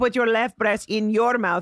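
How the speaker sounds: broken, mangled non-native English phrasing. Retelling a Russian boyfriend's wrong words: imitating Russian boyfriend's bad English. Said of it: "actually said this to me".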